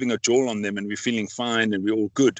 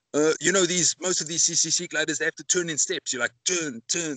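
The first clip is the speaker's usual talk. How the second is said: put-on Belgian accent with a raised, higher pitch. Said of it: "in his Belgian accent".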